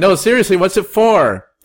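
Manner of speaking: shrill, high, loud badgering yell, acted. Retelling a story at a pharmacy, acting out a guy who kept shouting, imitating a man shouting. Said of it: "this guy keeps just shouting like".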